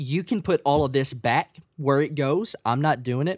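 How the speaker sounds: plain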